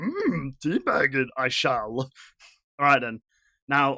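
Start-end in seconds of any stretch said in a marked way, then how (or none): 0.0-2.0 slow, drawn-out sing-song with swooping pitch. Mocking the other speaker's line as Yoda: Yoda impression. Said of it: "sound like Yoda there".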